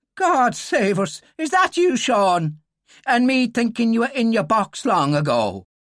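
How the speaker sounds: astonished, shocked, high exclamation. A narrator reads Fahey's reaction on suddenly seeing Sean Dillon, a shocked exclamation. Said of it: "Fahey turned very pale".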